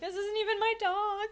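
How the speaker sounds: high-pitched, loud, exasperated voice. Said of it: "and you're like".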